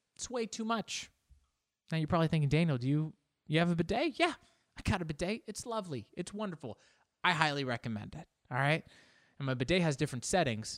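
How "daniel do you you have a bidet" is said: ordinary talk, nothing marked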